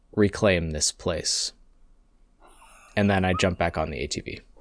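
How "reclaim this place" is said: hushed, quiet whisper under the breath. Voicing a character dripping blood on a cave-in: whispering quietly under breath. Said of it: "just whisper quietly under my breath".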